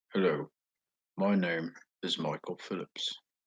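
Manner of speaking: attempted put-on English accent. Trying out accents, introducing himself by name; put-on English accent. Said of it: "I can do a kind of English accent".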